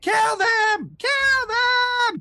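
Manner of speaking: very high, very slow, panicked, terrified yelling. Voicing a portly wererat struck by a glaive: terrified yelling wererat. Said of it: "He lets out a scream of terror and scr-, and yells".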